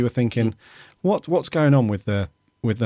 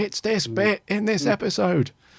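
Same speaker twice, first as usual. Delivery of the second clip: play-acted, very high-pitched shrieking scream; 10 semitones higher than usual. Retelling how listeners reacted: imitating listeners screaming. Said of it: "you were screaming".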